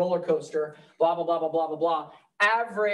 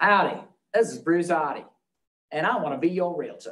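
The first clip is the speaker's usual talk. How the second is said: put-on Australian accent in local radio-spot style. Retelling a realtor's radio spot to listeners: imitating Bruce Hardy's Australian accent. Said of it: "he has this great Australian accent".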